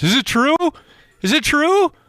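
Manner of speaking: panicky voice pitched way up. Retelling a buddy's phone call about a movie spoiler: imitating a friend's panicked voice. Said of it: "he's panic in his voice".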